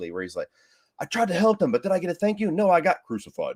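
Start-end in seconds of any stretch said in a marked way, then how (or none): 1.0-3.6 high, big, dramatic swooping delivery. Retelling a line from a theatrical cut: imitating Timothy Olyphant's dramatic tone shift. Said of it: "his tone of voice shifts dramatically".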